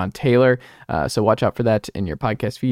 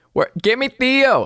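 shrill, very high, bad fake Boston accent; 14 semitones higher, 3 dB louder than usual. Imitating boston sports radio demanding theo, in a bad boston accent. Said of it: "I can't do a Boston accent".

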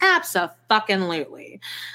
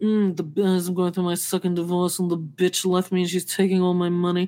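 put-on drunk man voice, lower; 3 semitones lower than usual. Retelling what a drunk man going through a divorce said: imitating a drunk man. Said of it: "so this drunk guy".

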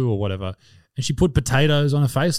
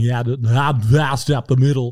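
rugby commentator voice, like live play-by-play. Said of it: "he's commentating porn".

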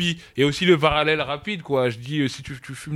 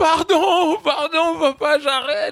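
mock panicked child voice, much higher, louder; 4 dB louder than usual. Father retells his son's reaction to his threat: imitating a child freaking out. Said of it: "il pète un câble".

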